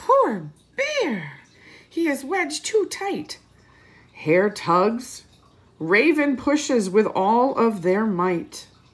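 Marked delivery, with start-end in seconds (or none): 0.0-3.4 high-pitched, squeaky little mouse voice. Reading a story aloud, voicing Mouse's line in Mouse's squeaky voice. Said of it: "Mouse squeaks".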